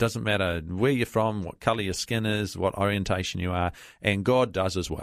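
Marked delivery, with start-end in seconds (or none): none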